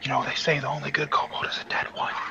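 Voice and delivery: very soft, in-character whisper. Whispering to another character in a tabletop game: whispering in character. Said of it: "I'm going to whisper to Qatar".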